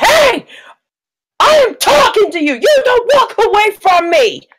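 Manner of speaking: very high, big shouty voice. In a tabletop game, a player's character calls after someone walking away, big shouty voice. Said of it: "because you're doing it with a big shouty voice".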